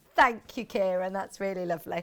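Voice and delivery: low, choked-up voice, on the verge of tears. Thanking someone for a Valentine's message, choked up, near tears. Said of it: "I'm going to cry".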